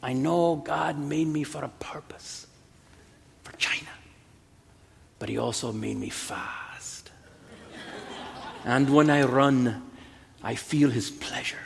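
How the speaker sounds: thick put-on Scottish brogue. Retelling the film scene where Eric Liddell explains himself to his sister, thick Scottish brogue. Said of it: "in that thick Scottish brogue".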